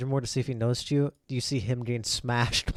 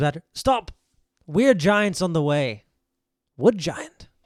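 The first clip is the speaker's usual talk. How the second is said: loud, booming stone giant voice; 4 semitones higher, 7 dB louder than usual. Retelling what the stone giant says to the others, stone giant voice. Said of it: "stone giant says".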